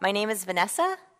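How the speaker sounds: upspeak, statement lilting up, rising inflection on one word. Explaining a study on how investors rated pitchers, demonstrating question inflection. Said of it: "when you make a statement sound like a question".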